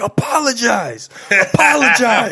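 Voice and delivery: angry yelling, pitched very high. Recounting a go-kart clash with another driver, retelling angry yelling. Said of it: "I was yelling at him".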